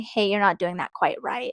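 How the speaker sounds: ordinary talk, nothing marked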